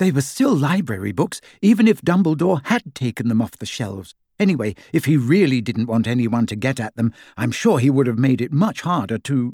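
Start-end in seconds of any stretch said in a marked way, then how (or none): none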